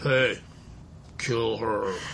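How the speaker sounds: put-on devil voice. Voicing what Satan would say about the Terry woman, in a Satan voice. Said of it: "That's my Satan voice".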